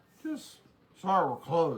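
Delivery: nasty, loud, swooping, dismissive tone. Retelling how a woman told them they were closed, mimicking a nasty tone. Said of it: "in a nasty tone".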